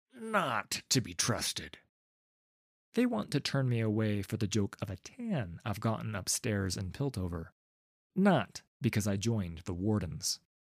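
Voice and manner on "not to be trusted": slow, contemptuous, dismissive, scornful sneer. A guard refuses to let the narrator in, sneering. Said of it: "lifting his chin with a sneer".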